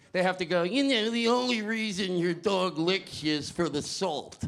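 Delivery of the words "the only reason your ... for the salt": mocking put-on voice, much slower. Mocking people who explain why dogs lick you, put-on voice mocking people. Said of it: "I have to do their voice like that".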